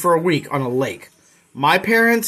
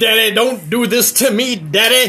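put-on strung-out voice, pleading; 4 semitones higher than usual. A father retells his son's reaction to being asked about a YouTube search, imitating a kid acting like a crackhead. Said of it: "Like he was on crack".

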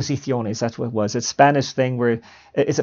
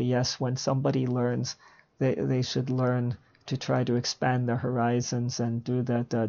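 flat, dull, lifeless, droning monotone; 12 dB quieter than usual. Imitating how a boring speaker used to talk: imitating a flat, dull speaker. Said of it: "you're a boring speaker ... he would talk like this".

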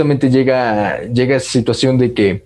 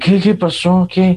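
groggy, barely awake, half-asleep, pitched up; 6 semitones higher than usual. Retelling waking parents with exam news, imitating the sleepy parents. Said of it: "durmiendo completamente".

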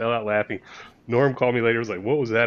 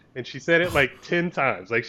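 plain

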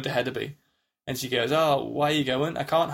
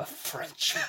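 put-on venomous tone, much quieter. Describing a close-up of a character in an adaptation, imitating Anna's venomous line. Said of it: "saying it with venom".

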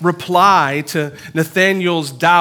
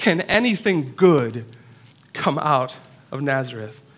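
low, contemptuous, scornful, mocking scoff; 3 semitones lower, 4 dB quieter than usual. Speaking to a room, retelling a man's remark; retold scornful, mocking tone. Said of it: "in a scornful and mocking tone".

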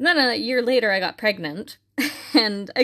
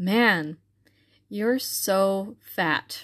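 mock deadpan poker-face delivery. Retelling a husband's joking remark to her: imitating deadpan delivery. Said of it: "he has an incredibly dry sense of humor".

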